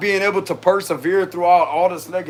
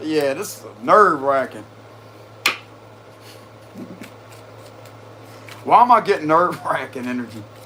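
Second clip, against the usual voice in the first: words breaking up with laughter while talking; 3 semitones lower than usual. Reading aloud and trying to stop laughing, laughing while talking. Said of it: "I'm really trying to stop laughing".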